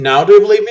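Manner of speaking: taunting, mocking tone. Narrating a role-play, she laughs at the lone wolf: mocking tone. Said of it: "says with a mocking tone".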